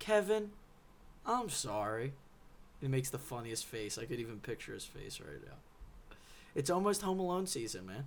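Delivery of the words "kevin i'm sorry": mock, grudging, reluctant forced apology, pitched up. Quoting a brother's apology from a movie scene: mock forced apology. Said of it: "same voice inflection that uh, Kevin's brother said to him".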